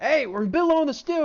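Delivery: very loud, high-pitched yell. Voicing a chef working in a busy tavern kitchen: acted chef shouting. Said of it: "shouting, like".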